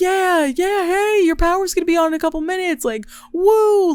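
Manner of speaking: play-acted, very high, chipper, cheery, upbeat voice. Retelling the workers fixing the power: imitating cheery upbeat workers. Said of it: "trying to keep your spirits high".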